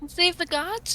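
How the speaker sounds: clumsy, badly faked, hushed pretend stage half-whisper. In a role-play scene, just after introductions: bad fake half-whisper. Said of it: "She like whispers, but very badly".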